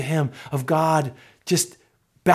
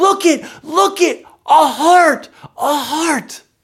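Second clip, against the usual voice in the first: put-on wonder, higher pitch, louder; 12 semitones higher, 7 dB louder than usual. Retelling how Catherine looked at the speaker in the store, imitating Catherine's wide-eyed wonder. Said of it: "in wide-eyed wonder and she says".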